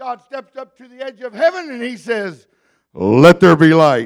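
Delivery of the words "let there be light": very deep, low, loud, booming proclamation voice. Telling the creation story, the speaker does his God voice. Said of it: "That's my God voice".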